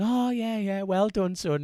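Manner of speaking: clumsy fake Spanish accent, very high and slow. Imitating a Spanish rider congratulating the winner: imitating a Spanish accent. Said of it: "I can't do Spanish accents".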